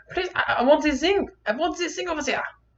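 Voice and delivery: very high-pitched, pleading put-on German accent. Retelling asking for things as a child: german accent. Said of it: "I guess I'm going to German today".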